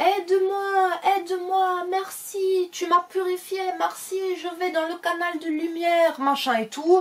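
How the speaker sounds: fake granny voice, squeaky.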